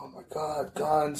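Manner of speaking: very slow, anxious, nervous outburst. Retelling a girl's reaction to soldiers with guns: imitating someone nervous. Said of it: "she was getting so nervous from all the guns".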